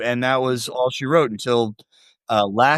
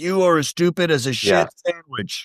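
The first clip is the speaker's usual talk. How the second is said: acted-out yell; 4 semitones higher than usual. Quoting a man insulting adults, retelling a yell. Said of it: "him yelling at people".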